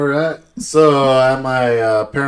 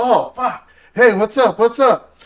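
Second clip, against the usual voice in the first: mock scared, flustered, startled, high-pitched voice; 9 semitones higher than usual. Retelling being surprised by the father's friends: imitating a startled reply. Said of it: "they scared the shit out of me".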